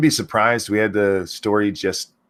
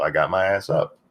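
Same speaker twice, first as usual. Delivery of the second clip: usual speaking voice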